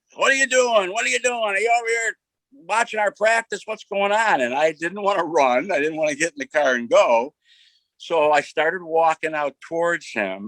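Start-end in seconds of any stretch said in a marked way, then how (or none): 0.2-4.4 put-on high-pitched, raised, demanding yell. Retelling how a coach spotted him watching practice: imitating someone yelling. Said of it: "he starts yelling".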